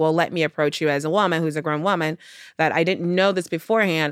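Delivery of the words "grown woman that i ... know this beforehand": ordinary talk, nothing marked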